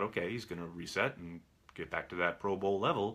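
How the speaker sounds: plain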